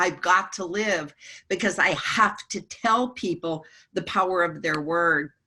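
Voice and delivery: ordinary talk, nothing marked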